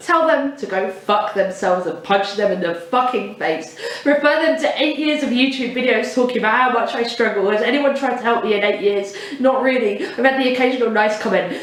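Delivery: ordinary talk, nothing marked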